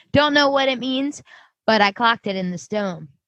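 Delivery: ordinary delivery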